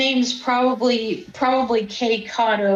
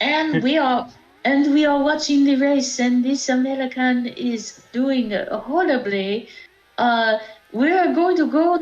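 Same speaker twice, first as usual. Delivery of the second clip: put-on Japanese-accented English throughout. Narrating the race they are watching, in a japanese accent. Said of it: "why are you speaking in that Japanese voice".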